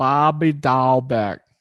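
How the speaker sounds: terrible put-on Boston accent. Talking baseball, saying a player's name in a bad Boston accent. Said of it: "That was my best Boston accent".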